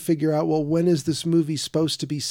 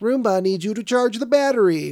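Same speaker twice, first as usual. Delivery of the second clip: higher-pitched machine-like robot woman voice; 5 semitones higher, 3 dB louder than usual. Speaker retells what the Roomba says at 3 a.m.: Roomba robot woman voice. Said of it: "it's like this robot woman voice".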